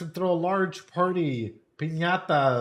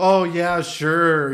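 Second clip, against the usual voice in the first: loud, sarcastic, joking yes, tossed off, acted out; 8 dB louder than usual. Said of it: "as a joke".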